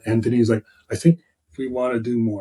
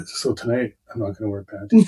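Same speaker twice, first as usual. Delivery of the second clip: voiced, hushed half-whisper; 2 semitones lower, 4 dB quieter than usual. Retelling a partner's remark while shopping: imitating her half-whisper. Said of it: "she's whispering stuff".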